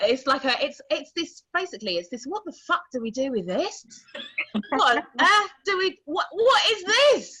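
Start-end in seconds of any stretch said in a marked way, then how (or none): 2.2-7.2 put-on frightened reaction, higher and louder. Retelling how strangers at an audition react: imitating a fearful reaction. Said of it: "it's fear".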